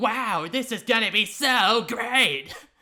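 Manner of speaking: high, booming, stretched-out cartoon excitement. Speaker recalls trying to mimic a cartoon character's energy; Cool Cat energy voice. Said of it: "that Cool Cat energy".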